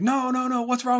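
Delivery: very high, shrill, angry, overstressed screaming. Retelling a film scene where the director comes out: imitating a screaming director. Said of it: "He's screaming at everybody".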